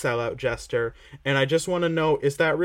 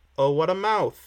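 put-on weird inflection, higher; 2 semitones higher than usual. Quoting how someone said a line, mimicking his weird inflection. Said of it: "he says it with like a weird inflection".

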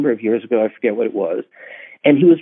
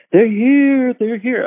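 shrill, alarmed scream, pitched very high; 11 semitones higher than usual. Retelling the end of a movie, the speaker does a screaming Kevin McCarthy impression. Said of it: "he's screaming".

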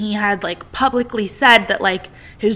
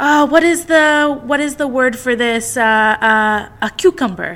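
imitated Spanish accent; 3 semitones higher than usual. Retelling how a woman spoke in an interview, imitating her Spanish accent. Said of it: "in her little, like, Spanish accent".

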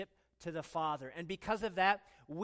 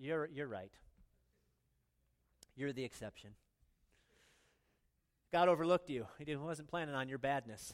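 mock, sarcastic, falsely reassuring tone; 4 semitones lower than usual. Retelling own reply to someone who feels too bad: sarcastic reminder. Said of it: "sarcastically remind".

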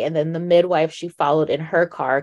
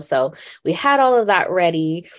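ordinary delivery

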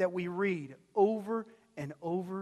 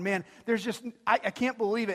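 plain

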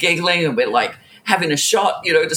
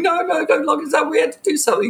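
put-on very high, blubbering, pitiful crying plea; 9 semitones higher than usual. Retelling a moment when they might be arrested, imitating pathetic crying. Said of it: "being pathetic and crying and going".

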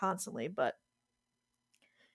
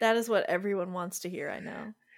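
ordinary talk, nothing marked

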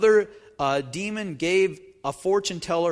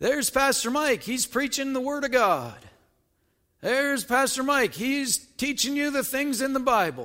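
loud, pitched-up, mocking sarcastic heckling; 7 semitones higher than usual. Acting out a heckler calling from the back of the church: loud sarcastic heckling. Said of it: "very loudly and in a sarcastic tone".

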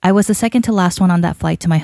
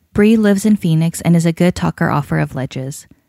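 ordinary delivery

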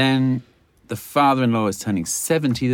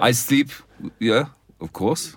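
put-on German accent. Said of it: "You're sounding German now".

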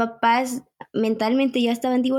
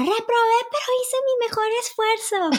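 very high shout as if calling across a distance; 11 semitones higher than usual. Recalling shouting to Mom from far away after failing an exam: retelling a shout from afar. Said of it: "le gritaba a mamá".

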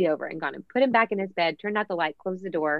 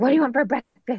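put-on frustrated motherly voice, higher, louder; 6 semitones higher, 4 dB louder than usual. Mom contrasting her normal voice with her mock-frustrated mom voice. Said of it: "not my, ... frustrated".

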